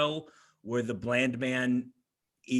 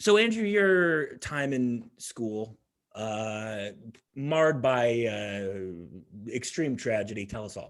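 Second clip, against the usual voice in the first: ordinary delivery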